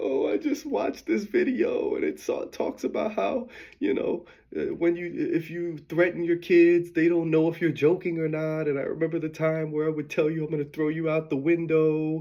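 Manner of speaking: crying, tearful, rushed outpouring of words. Retelling the day mom called on the phone, imitating mom crying. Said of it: "she's crying like".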